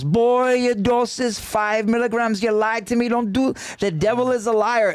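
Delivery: put-on Jamaican accent, pitched high. Retelling what a woman said when asking about a dose, in a jamaican accent. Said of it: "I may try to do my Jamaican accent".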